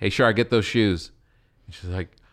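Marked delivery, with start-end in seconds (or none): none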